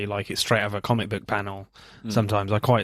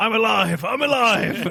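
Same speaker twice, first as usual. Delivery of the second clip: very high, very slow, drawn-out yelling; 12 semitones higher than usual. Retelling a film scene where Jason Statham shouts: imitating Jason Statham shouting. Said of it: "Jason Statham is just shouting".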